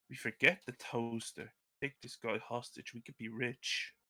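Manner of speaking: very quiet whisper. Leaning over to another character's shoulder to suggest a plan: whispering. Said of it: "whisper to him".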